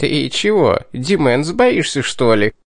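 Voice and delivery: jeering, mocking, taunting little tease. The imp suddenly jumps up and questions Dimens; mocking question. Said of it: "насмешливо вопросил".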